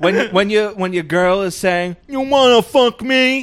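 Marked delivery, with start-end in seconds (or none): 2.1-3.4 put-on slow, dopey, dim-witted voice, pitched up. Retelling an actress's movie line: imitating a mock dim-witted voice.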